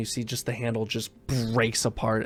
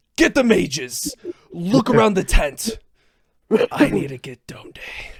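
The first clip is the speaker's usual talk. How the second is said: very high, shrill, swooping shouting; 10 semitones higher, 8 dB louder than usual. Game master voicing a guard whose eyes widen, shouting. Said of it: "as he shouts".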